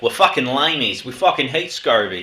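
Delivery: put-on American accent. Joking about hating scurvy over drinks: put-on American accent. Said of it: "What accent was that?".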